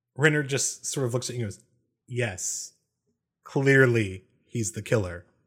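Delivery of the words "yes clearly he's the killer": very drawn-out, totally unimpressed, unamused delivery. Voicing a character answering a claim about who the killer is, unamused deadpan. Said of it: "He seems completely unamused".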